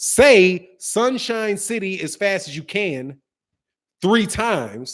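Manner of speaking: pause after can, before three. Explaining how an instruction is worded, with a pause before 'three times'. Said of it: "Hear that pause?".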